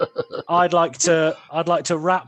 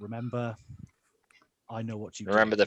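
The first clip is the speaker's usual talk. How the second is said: hushed threatening whisper, lower and quieter; 6 semitones lower, 10 dB quieter than usual. Whispering a threat to a character in a role-play game: whispering a threat in character. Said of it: "just whisper to him and says".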